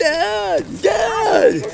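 very high, ragged, shrieking yell. Recalling running around the house calling for dad: retelling a yell. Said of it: "running around the house yelling".

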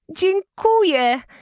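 delighted cry, very high and bright. A girl thanks a witch for her gift: overjoyed exclamation. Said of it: "zawołała uszczęśliwiona Anna".

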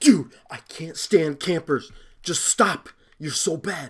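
very loud, angry, exasperated, fed-up outburst. Playing a game and fed up with campers, mad at campers. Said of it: "I'm mad right now".

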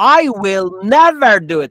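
never strongly stressed as key word. Teaching which word is key in a sentence, stress on never. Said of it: "Never در اینجا جمله کلیدی شماست. بعد روش تاکید کنی".

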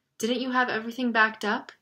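ordinary delivery

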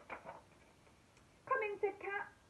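put-on teeny, tiny little voice from far off. Reading a story aloud, the cat calls the dog in, in the teeniest faraway voice. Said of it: "in the teeniest, tiniest, most faraway voice".

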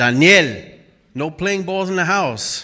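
put-on Spanish accent, calling out. Imitating his mother when he's in trouble, mom's spanish accent. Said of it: "when she says my name with a Spanish accent".

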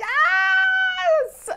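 very high, loud scream. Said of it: "us just screaming".

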